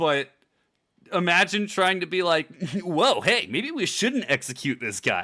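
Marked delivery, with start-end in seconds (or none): 2.8-5.2 goofy, swooping, silly put-on funny voice. Showing how the voice would sound during a tense D and D game, in a funny character voice. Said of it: "I'm capable of doing the voice".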